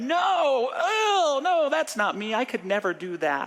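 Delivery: very high, flustered, embarrassed, drawn-out delivery. Retelling answering a minister's question after turning beet red: retelling own embarrassed denial. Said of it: "I just turned beet red".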